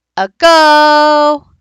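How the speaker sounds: short a, long stretched stressed go. Explaining word stress by calling a dog, say a go with stress on go. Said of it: "A is the short part, go is the long part, it's the stressed part".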